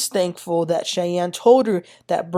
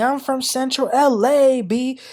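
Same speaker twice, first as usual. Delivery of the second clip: scream stretched out, high and slow; 6 semitones higher than usual. Retelling a confrontation where security is called, imitating someone screaming. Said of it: "Brooke starts screaming".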